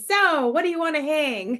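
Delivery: mock brash, confident, pushy salesman swagger. An artist pictures walking into galleries with her art, putting on salesman confidence. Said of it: "that tone of voice, that confidence".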